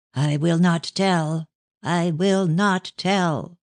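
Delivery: slow, fierce voice. Reading a story where a woman refuses to answer: fierce voice. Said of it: "she said in a fierce voice".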